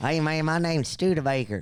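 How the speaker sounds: put-on rural Georgia accent. Imitating a trail friend from rural Georgia: imitating Studebaker, rural Georgia accent. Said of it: "He talk like this?".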